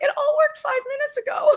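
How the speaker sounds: frantic presenter voice, very high-pitched. Retelling a webinar presenter on a call, imitating a frantic high voice. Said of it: "frantic with a high voice going".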